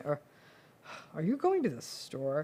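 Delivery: scornful voice full of contempt. Showing how tone changes a simple question: contemptuous.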